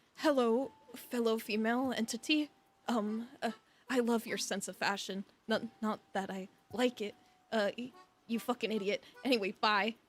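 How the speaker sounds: put-on, fake tsundere persona. Speaker acting out what they would say to her, in a put-on tsundere act. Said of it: "I would go Tsundere on her".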